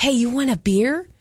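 put-on whisper. Acting out asking from three rooms away: acting out a whisper. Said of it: "if I'm whispering three rooms away".

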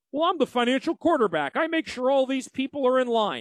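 mocking financial planner impression. Speaker complaining about financial planners imitates them: mocking financial planner impression. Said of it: "mocking impression of financial planners' claim".

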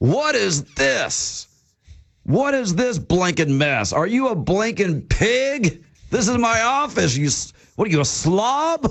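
acted, furious, high, top-of-the-lungs yelling. Retelling a man on the board yelling at someone venting: retelling a top-of-lungs yell. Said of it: "he's yelling, Billy, at the top of his lungs".

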